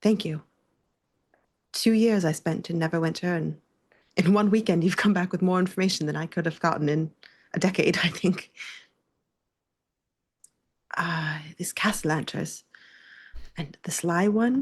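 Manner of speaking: touched, moved, a little emotional, feeling showing through. Voicing a character thanking the listener for new leads: a little emotional. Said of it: "Tav kind of gets like a little bit emotional".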